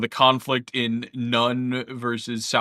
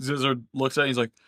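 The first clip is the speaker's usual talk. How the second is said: normal talking voice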